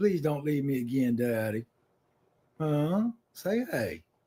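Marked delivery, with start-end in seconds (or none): 0.0-1.6 character voice of a dog. Voicing the pet dog who has not left his side: speaking as the dog. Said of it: "she's like".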